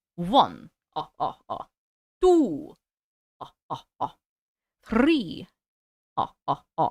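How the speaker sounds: deep, swooping Russian accent in a vampire voice. Trying out a Russian accent, landing on a Count Dracula accent. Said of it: "I sound like Count Dracula".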